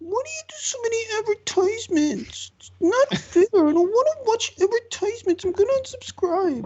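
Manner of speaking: put-on very high, tiny baby troll voice. Retelling the end of his video, where he did the baby troll voice. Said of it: "the baby troll voice comes in from off camera".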